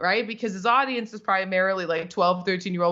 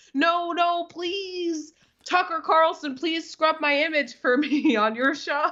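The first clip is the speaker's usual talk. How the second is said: play-acted tearful begging, high pitch, sobbing through crying; 8 semitones higher than usual. Retelling how he begged after getting banned: imitating someone sobbing.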